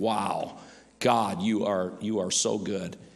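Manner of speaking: slow, humble, wonder-struck, awed tone. Retelling a king's reply to God, voicing awed gratitude. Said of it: "a man of gratitude saying".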